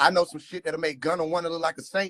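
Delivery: ordinary talk, nothing marked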